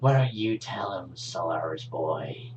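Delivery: the most unpleasant, spiteful tone. A character slowly turns and looks at another character, in a spiteful voice. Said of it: "complete spite in his voice".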